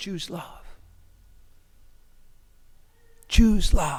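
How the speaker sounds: loud, full voice. Voicing the Good Shepherd speaking into the ear in crisis: whispering. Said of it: "whispering this".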